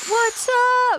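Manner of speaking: very high, bubbly, excited, put-on hyped voice. Retelling opening a show as the first one on stage: imitating an excited greeting. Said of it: "so excited".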